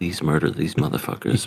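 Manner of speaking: mock muttering under breath. Retelling what a character secretly says: imitating muttering under breath. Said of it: "saying under her breath".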